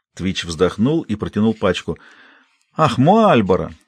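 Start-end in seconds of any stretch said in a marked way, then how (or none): 2.8-3.7 joyful, delighted exclamation. A man handed a pack of cigarettes exclaims: joyful exclamation. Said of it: "радостно воскликнул Расти".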